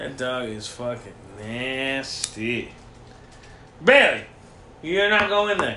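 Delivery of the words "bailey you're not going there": yelled out loud. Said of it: "Gotta yell at her like that sometimes".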